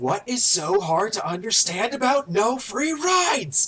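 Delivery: loud, slow, rising, drawn-out angry shout. A game master voices the train captain as warriors leap aboard, captain shouting. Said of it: "And the captain just shouts".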